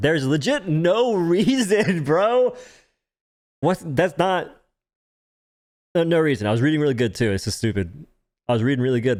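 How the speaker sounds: choked-up, near tears. Speaker reading a statement aloud, tearing up. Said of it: "That's not why I'm crying. Or tearing up".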